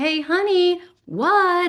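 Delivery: high, loud calling voice carrying far.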